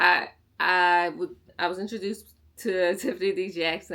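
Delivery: stuttering. Going over the books they read, stuttering. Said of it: "I don't know why I'm stuttering".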